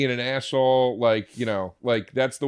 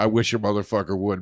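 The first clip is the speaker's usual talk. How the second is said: usual speaking voice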